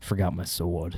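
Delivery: low, slow, quiet, casual action-hero delivery. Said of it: "and he goes".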